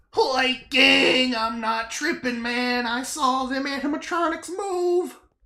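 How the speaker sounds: goofy, high-pitched cartoon sidekick character voice. During a game session, speaking up in a Shaggy voice. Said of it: "Shut the fuck up, Shaggy".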